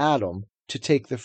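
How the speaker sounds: ordinary delivery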